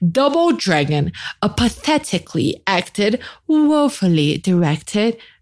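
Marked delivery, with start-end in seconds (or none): 1.4-5.1 amateur attempt at a British English accent. Quoting a movie review in an attempted British accent. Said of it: "That was my attempt at a British accent".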